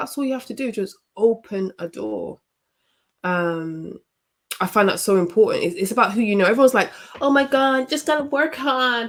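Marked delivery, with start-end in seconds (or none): 7.2-9.1 put-on American accent, pitched up. Mimicking YouTube gurus, in a fake American accent. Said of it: "my fake American accent".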